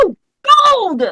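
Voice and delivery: very high, full-volume, top-of-the-lungs screech. Showing the game master how loud the character screams: screaming as loud as possible. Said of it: "I'm screaming it as loud as I can".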